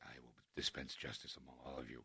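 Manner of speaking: very low, hushed, deep bass rumble. Retelling how playing Batman made the voice go bassier: bassier Batman voice. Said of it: "my voice, I think, has gotten naturally more bassier".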